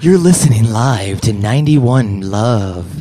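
sultry, smooth, sexy late-night radio DJ voice. Describing a guest's voice by imitating it, sexy DJ voice. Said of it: "He's got like that sexy DJ voice".

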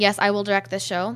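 ordinary talk

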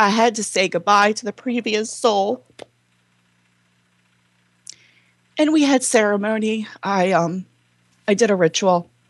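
emotional, tearful, choking up. Recalling saying goodbye to a previous soul, emotional and choking up. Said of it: "this is a little emotional".

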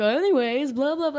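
put-on talking dog voice. Retelling a scene from the movie Up: Doug the dog voice. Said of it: "he talks like this".

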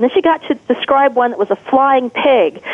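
normal talking voice

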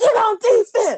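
very high, loud, slow yelling. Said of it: "You know, I'm yelling".

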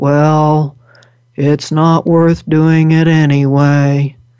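deep voice with "well" drawn out. Quoting the Winnie the Pooh donkey in his deep voice: deep Eeyore voice. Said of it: "in his deep voice saying".

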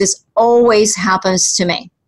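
normal talking voice

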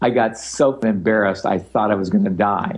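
ordinary delivery

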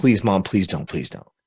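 mock begging, pleading, repeated. Speaker retells begging his mom not to do this; retelling his pleading. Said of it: "And I'm just pleading".

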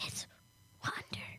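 mock quiet speaking. Teasing someone by copying how they said the title, imitating someone saying it quietly. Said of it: "that quiet".

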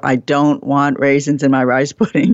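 ordinary talk, nothing marked

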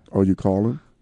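fake seductive voice. Urging listeners to call in, put-on sexy voice. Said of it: "Is that your sexy voice?".

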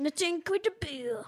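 bad put-on French accent. Speaker recalls the french bomb guy from mr. incredible, in a very poor french accent. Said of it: "that's a very poor French accent".

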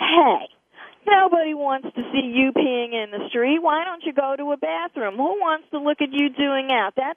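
mild, toned-down calling-out voice. Retelling calling out to a man peeing in the street, loud calling out. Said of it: "I got a nice, big, loud voice, and I'm calling out".

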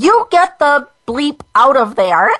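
high-pitched, mild scream. Retelling a patient ordering the doctor away: imitating a scream. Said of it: "And she screamed".

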